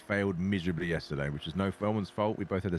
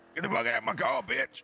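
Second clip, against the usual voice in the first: put-on Louisiana accent, very high, aggressive. Speaker redoing a voice of an aggressive guy from Louisiana, aggressive Louisiana guy voice. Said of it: "I really enjoyed doing that voice".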